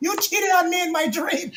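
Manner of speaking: high, laughing female voice in a Jamaican accent.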